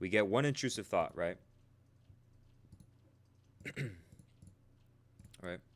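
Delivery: hiccupy speech broken by hiccups. Presenter explaining a decision-making funnel to an audience, hiccuping. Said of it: "I'm like hiccuping".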